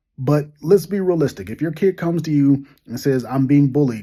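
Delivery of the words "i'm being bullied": ordinary talk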